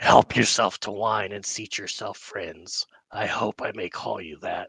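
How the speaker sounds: rasping, dry, parched-sounding voice. Voicing a figure welcoming the party during a role-play game, dry raspy voice. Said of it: "dry, raspy voice provides no clue".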